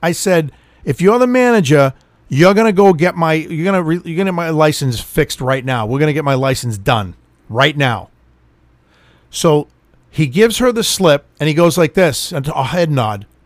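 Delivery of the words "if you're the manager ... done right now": ordinary talk, nothing marked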